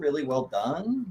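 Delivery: plain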